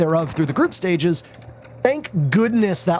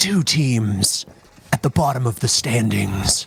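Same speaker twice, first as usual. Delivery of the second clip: very low, deep, dramatic movie-trailer announcer voice; 7 semitones lower than usual. Offering to be the movie announcer voice guy: movie trailer announcer voice. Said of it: "I could be the movie announcer voice guy".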